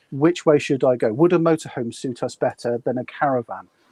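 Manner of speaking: usual speaking voice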